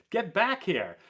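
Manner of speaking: loud yell carrying across a distance. Retelling yelling at a third baseman who ran too far out: imitating own yelling. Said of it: "and I'm yelling".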